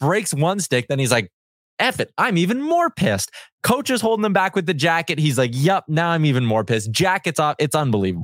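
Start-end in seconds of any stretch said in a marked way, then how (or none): none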